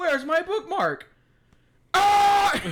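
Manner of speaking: put-on furious shriek, very high and very loud. Describing the High King losing his place, the speaker does Thorgrim's mock-angry outburst. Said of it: "he gets like really angry about it".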